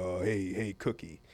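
deep, slow, rumbling baritone. Retelling how Eddie greeted the speaker: imitating Eddie's deep baritone voice. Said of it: "Eddie had this deep baritone voice".

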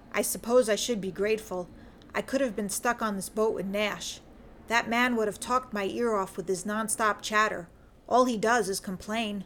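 plain

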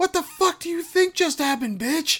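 very high-pitched, yelled heckle shout. Retelling a friend shouting at a movie screen: retelling a friend's yell. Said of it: "yells out in this packed theater".

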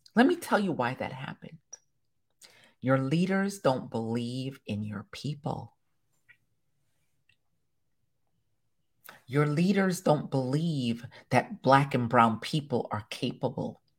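very low, soft, close-to-mic half-whisper. Leaning close to the mic to tell listeners why it happened, half-whispering. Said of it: "Let me whisper it for you".

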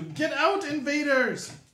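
very high-pitched shout. He shouts at the players' characters across an area of webbing, shouting. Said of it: "And he shouts at you".

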